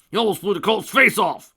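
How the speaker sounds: shrill, booming, furious bellow, very loud. A narrator voices a father scolding his son; angry roar. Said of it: "The angry voice roared".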